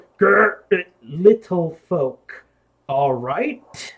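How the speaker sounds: loud, strange, weird giantess voice with a growl. Voicing a giant who peers into the cave: weird giant voice. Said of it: "you hear in this, uh, weird voice".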